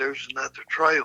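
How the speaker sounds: whispered. Retelling what the speaker whispered to a companion on the trail: retelling a whisper. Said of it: "And I whispered to him".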